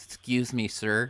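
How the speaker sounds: put-on cartoon dog voice. Imitating the bouncer asking a man to leave: Droopy voice. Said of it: "Hey, Droopy".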